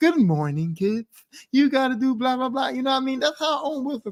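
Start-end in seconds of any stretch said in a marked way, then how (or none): 0.0-2.7 put-on condescending kids' TV host voice, talking down. Explaining how Owen Wilson sounds, kids' show host voice. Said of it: "talking to you like you a kid".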